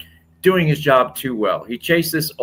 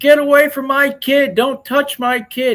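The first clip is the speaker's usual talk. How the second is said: put-on very high, stretched-out, drawn-out shriek; 14 semitones higher, 4 dB louder than usual. Retelling a woman caught stealing in a parking lot: imitating someone screaming. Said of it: "She starts screaming".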